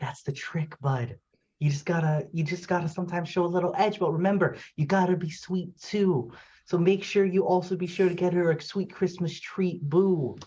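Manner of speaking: stage whisper. Leaning down in character to give a dog advice: half-whispering in character. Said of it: "I go down and whisper".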